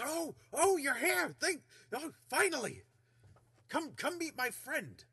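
very high, loud character voice, tripping over words. Voicing Volo greeting the party at the table: Volo's voice. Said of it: "He goes".

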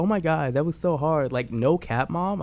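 put-on high-pitched girly voice.

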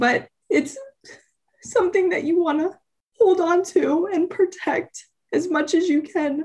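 tearful, crying through the words. The speaker breaks down partway through a sentence, crying while speaking. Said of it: "sorry, I don't know why I'm crying".

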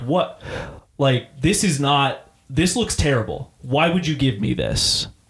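put-on fuming, angry voice. Retelling how a customer came back with a complaint, imitating a fuming customer. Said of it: "fuming. He's, like, pissed".

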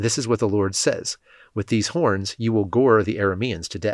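plain reading voice

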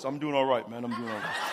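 deepened, very low, soft tough-guy voice. A pastor retells answering a man's greeting, putting on a deepened voice. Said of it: "I had to deepen my voice".

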